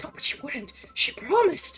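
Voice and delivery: hysterical muttering under the breath. Voicing an NPC who talks to herself in disbelief: hysterically talking to herself. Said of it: "she is hysterically talking to herself".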